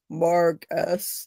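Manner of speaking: put-on deep, booming, intimidating voice. Retelling a show scene where one character catches another: scary deep booming voice. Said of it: "that really scary, deep, booming voice".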